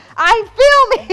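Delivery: exasperated, loud, drawn-out yell.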